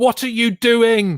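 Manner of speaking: very high, drawn-out shout. Retelling how they react to the show: imitating shouting at the tv. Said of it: "I'm just shouting at the T V going".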